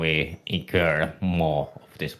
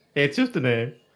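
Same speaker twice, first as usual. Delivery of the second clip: higher voice, words broken up by giggling laughter; 8 semitones higher than usual. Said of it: "Why are you laughing?".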